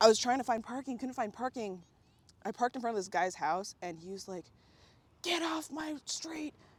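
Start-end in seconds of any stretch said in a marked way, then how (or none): 5.2-6.5 put-on high-pitched yelling, stretched out and drawn-out. Retelling how a guy reacted to parking in front of his house: imitating a guy yelling. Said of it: "started yelling at me".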